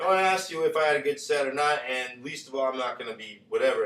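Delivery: ordinary delivery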